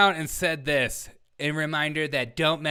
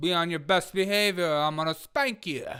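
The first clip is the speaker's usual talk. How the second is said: put-on New York accent. Mocking a city official's warning to visitors: put-on new york accent. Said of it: "I don't know where my accent went".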